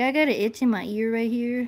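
speaking in a dog voice. Speaking for a dog scratching an itch: voicing the dog. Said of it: "He's like".

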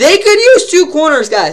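high, cracking voice breaking mid-line. Talking to viewers about the Cardinals' cornerbacks, voice cracking. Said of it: "So that was a bad voice crack".

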